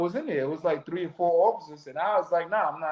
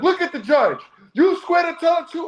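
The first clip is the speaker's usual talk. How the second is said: put-on screaming, higher and louder; 11 semitones higher, 5 dB louder than usual. Retelling a court officer's orders to the court: imitating a marshal screaming. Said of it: "when I tell you he was screaming".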